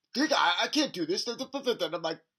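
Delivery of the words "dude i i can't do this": mock very nervous, on-edge, loud voice. Retelling a parking-lot confrontation with a guy; imitating a nervous guy. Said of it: "he's very nervous".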